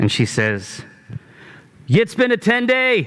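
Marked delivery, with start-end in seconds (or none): 1.9-3.1 booming, loud, projecting voice, higher than usual. Voicing a young woman calling up to a rampart: loud projecting voice. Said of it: "her voice projects significantly greater than one might expect".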